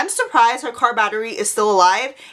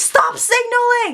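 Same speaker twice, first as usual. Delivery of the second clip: play-acted very high, shrill, offended, all-out yell; 11 semitones higher than usual. Retelling a standoff over a parking spot, the speaker reenacts yelling at the top of their lungs. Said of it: "I'm yelling at the top of my lungs like".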